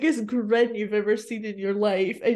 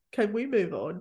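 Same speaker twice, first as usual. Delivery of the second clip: mock-deadpan delivery, much quieter; 4 dB quieter than usual. Retelling a man sitting through personal questions; retelling a deadpan remark. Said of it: "I love how deadpan he is".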